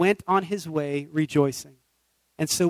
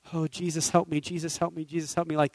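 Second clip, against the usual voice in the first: put-on emotional pleading, quieter; 6 dB quieter than usual. Retelling waking up one morning and praying: retelling an emotional plea. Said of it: "this emotional".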